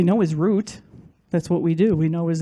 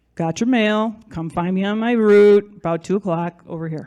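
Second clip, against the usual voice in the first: ordinary talk, nothing marked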